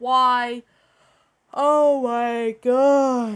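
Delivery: very slow, drawn-out speech through a yawn. Complaining about creepypasta stories, the speaker talks while yawning. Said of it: "pardon me about me yawning".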